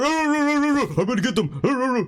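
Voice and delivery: very high, very slow voice. Retelling the dad going after a rooster: imitating dad's low deep voice. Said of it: "he kinda gives a low, deep voice".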